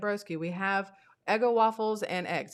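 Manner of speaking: ordinary delivery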